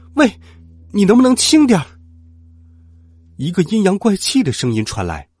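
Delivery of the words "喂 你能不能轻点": very high, loud cry of pain. The narrator, hair torn out with the blindfold, yells: shouting in pain. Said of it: "痛得龇牙咧嘴，大声喊道".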